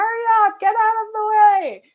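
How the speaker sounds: mock very high, irate, angry screaming. Recalling cars stuck behind the speaker, imitating drivers screaming. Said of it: "cars behind me that were just screaming".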